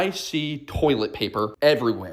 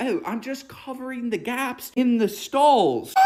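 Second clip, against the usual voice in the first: very high, squeaky put-on British accent; 10 semitones higher than usual. Retelling a man's answer while putting toilet paper on a stall; British accent. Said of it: "In this British accent".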